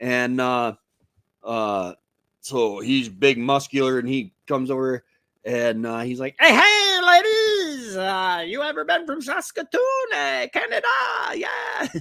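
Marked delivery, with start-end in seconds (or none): 6.4-11.9 absurdly high-pitched put-on voice, way up top. Retelling how a guy came over to the girls, in a real high-pitched voice. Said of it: "he's got this real high pitched voice".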